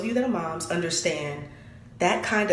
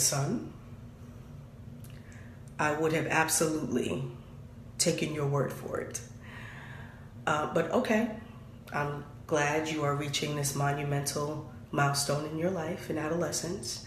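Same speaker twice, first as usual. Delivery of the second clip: mock composed, calm, soft, measured, every word crisp; 5 semitones lower, 7 dB quieter than usual. Quoting his own earlier reply, kept outwardly calm and carefully enunciated. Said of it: "Outside, Meredith Grey. ... I am measured. I enunciate".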